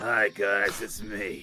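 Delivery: put-on chain-smoking magical girl voice. Imagining the magical girl as a chain smoker: chain-smoking magical girl voice. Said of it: "Imagine if she's like a chain smoker".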